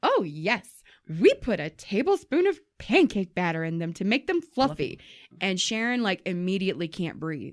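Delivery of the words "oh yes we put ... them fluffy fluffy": mock puffed-up, self-important delivery. Retelling how the manager answered their question about the food, mock-proud manager. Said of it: "And all fucking proud".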